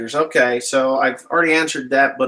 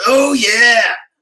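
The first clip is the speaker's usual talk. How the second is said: big, loud, booming screamed yell; 7 semitones higher, 6 dB louder than usual. Recalling an old Kool-Aid commercial, imitating the Kool-Aid scream. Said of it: "starts screaming".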